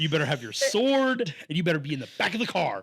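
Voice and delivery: put-on angry voice. Friends joking about how they'd write the lore, in a mock-angry parent voice. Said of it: "like an angry parent being like".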